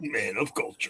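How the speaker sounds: big, grand epic movie-narrator man voice. Repeating a joke phrase for the other speakers: put-on epic man voice. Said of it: "you even get the, the epic man voice".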